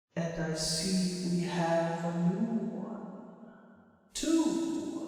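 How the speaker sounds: very soft, very slow, breathy, watery underwater voice. Narrating the Mind Flayer turning to you and speaking: breathy underwater Mind Flayer voice. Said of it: "says in a like a breathy voice. It sounds like it's sort of underwater".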